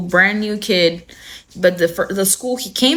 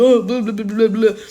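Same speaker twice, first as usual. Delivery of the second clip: mock, imitated stuttering; 2 semitones higher than usual. Retelling a film scene where a bully reads aloud: imitating someone stuttering. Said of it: "stuttering and shit".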